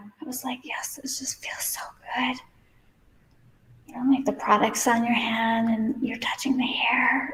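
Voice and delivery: hushed whisper. Styling hair on camera and talking to viewers, whispering. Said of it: "I'm whispering".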